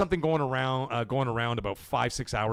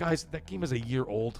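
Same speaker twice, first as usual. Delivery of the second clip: usual speaking voice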